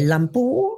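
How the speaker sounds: Lumpur rising at end.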